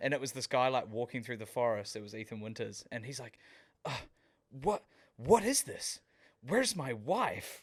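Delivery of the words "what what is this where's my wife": slow, drawn-out, cheesy American hero voice. Imitating a game character walking through the forest: cheesy American Ethan Winters voice. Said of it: "Just the most, like, cheesy American".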